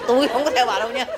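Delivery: stubborn, high, rising, stammered tone.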